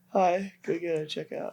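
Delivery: high, soft, meek, timid little voice. Mimicking how the other person talked, imitating a timid voice. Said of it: "it's just like very timid".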